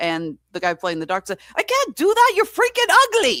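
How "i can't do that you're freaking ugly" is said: odd put-on Swedish accent, pitched very high. Retelling a Frankenstein scene, imitating the doctor's actor in a weird Swedish accent. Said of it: "chose this weird Swedish accent".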